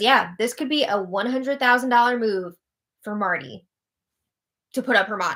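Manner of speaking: plain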